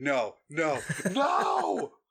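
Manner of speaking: no screamed as small, swooping wail. Expecting a character to die during a close-up, retelling her screaming. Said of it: "So I'm just screaming".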